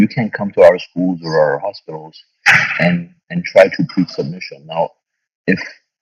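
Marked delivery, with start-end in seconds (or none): none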